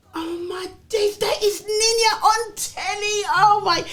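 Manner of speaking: amazed gasp.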